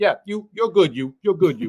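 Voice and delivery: put-on New Jersey accent. Musician recalls his bass player nodding at him onstage, imitating Tommy's New Jersey accent. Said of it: "so he's got the New Jersey accent".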